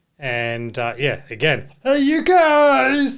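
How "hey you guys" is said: very high, loud, shoddy character voice, guys stretched out. Quoting a line from the film being discussed: really shitty Goonies impression. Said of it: "that's my really shitty impression".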